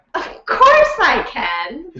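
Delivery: high, slow, mock-confident bluffing tone. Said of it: "I was like".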